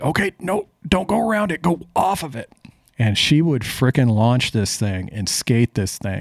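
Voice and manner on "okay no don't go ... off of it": put-on very high-pitched shouting. Retelling how they shouted driving tips over the motor: retelling a yell over a motor. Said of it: "I was just yelling".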